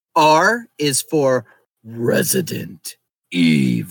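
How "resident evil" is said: drawn-out deep, slow delivery. Doing the podcast intro line as an impression of the Resident Evil announcer. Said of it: "that's my impression of the guy at the very beginning of the first Resident Evil".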